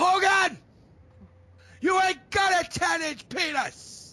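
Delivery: very high, slow, loud, stretched-out taunting. Imagining a wrestler reacting while watching the clip: Ric Flair impression. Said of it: "That was a great impression".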